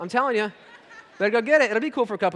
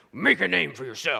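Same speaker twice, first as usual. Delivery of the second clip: low, rough tough-guy voice; 5 semitones lower than usual. Picturing an actor saying a noble-sounding phrase: Clint Eastwood voice. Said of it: "I just imagine Clint Eastwood saying it".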